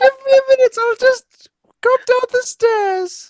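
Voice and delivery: very high, very loud, put-on old lady voice. Playing an old lady answering a knock at the door: put-on old lady voice. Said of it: "He's had accent up the whole time".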